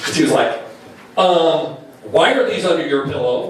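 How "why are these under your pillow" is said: plain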